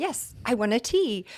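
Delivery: high-pitched, excited delivery. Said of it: "And he was all excited".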